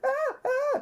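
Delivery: very high-pitched mock shrieking scream. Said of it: "Little lady on the ground screaming".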